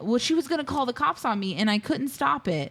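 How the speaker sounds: ordinary delivery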